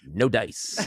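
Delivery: put-on tough-guy voice. Retelling the cartoon mother who is a version of Charles Bronson: Charles Bronson voice. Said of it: "everyone's a version of Charles Bronson".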